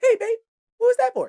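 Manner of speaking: put-on squeaky, very high-pitched baby talk. Acting out a boyfriend reacting after being checked: imitating a squeaky voice. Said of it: "voice get all squeaky".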